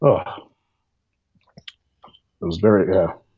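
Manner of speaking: very slow voice, catching and choked up with emotion. Speaker recalling a big day to the other speaker: choked up. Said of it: "I'm getting a little choked up right now".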